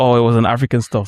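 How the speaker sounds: ordinary talk, nothing marked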